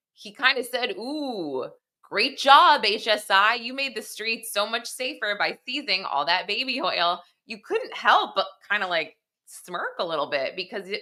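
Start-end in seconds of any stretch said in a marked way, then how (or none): 1.0-7.2 slow, sarcastic, fake-sounding tone. Retelling remarks that connected with the jury: imitating Mark Agnifilo's sarcasm. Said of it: "Mark Agnifilo made these sarcastic statements".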